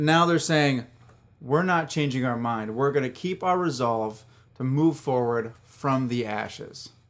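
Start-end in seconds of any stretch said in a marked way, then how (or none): none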